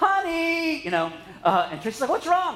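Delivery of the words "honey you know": play-acted, cartoon-style high yell. Retelling calling to his wife after cutting his thumb, retelling a yell, The Incredibles-style. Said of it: "I yelled to my wife".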